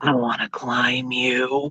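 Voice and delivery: creepy, low, husky half-whisper. Speaker retelling what a shorter man who kept hitting on them half-whispered: imitating a creepy husky half-whisper. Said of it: "very creepily and huskily whispered".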